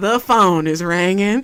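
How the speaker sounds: loud, slow Louisiana country drawl. Retelling how grandpa spoke up during a family prayer: imitating grandpa's country accent. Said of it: "he's so country, so his accent".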